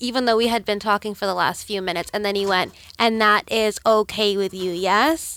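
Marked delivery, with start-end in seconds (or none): 3.0-5.4 put-on, exaggeratedly slow, simplified speech. Retelling a doctor's question before the second shot: imitating slow speech to a child. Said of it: "was speaking very slowly, like I was a child".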